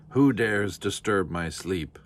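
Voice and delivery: monstrous voice. A voice from the blackness speaks to Nanny, in a thundering monstrous voice. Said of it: "thundered a monstrous voice from the blackness".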